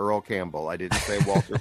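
plain

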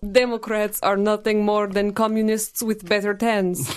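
put-on Russian accent. Delivering a joke line when asked for the best Russian accent: Russian accent. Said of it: "Give me your best Russian accent".

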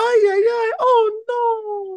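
very high, very slow, unconvincing fake woman voice. Imitating a dubbed actress's badly dubbed lines: imitating a man doing a woman's voice. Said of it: "That is a man doing a woman's voice".

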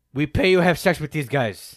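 fake Russian accent, very loud and high. Imitating them offering women money on the show: put-on Russian accent. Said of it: "Was that Russian?".

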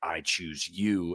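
hellish demonic voice. Describing a scene where a trapped girl is pulled to hell, demon voice. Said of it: "this, like, demon voice".

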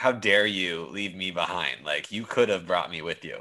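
mock attitude-laden, sassy, reproachful tone. Retelling a scene where Crosshair complains about being left: sassy Crosshair voice. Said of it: "kind of in a sassy".

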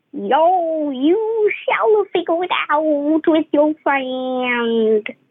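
put-on pirate voice, drawn-out "yo". Joking about a pirate giving sensible advice, in a pirate voice. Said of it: "a pirate with a pirate voice".

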